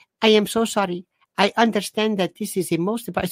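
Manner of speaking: mock, overdone, lugubrious sympathetic tone, scripted-sounding. Mocking how bank staff talk to customers, imitating mournful bank staff. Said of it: "people that talk like this".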